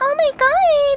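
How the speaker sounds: put-on high, excited girly voice with drawn "ooh".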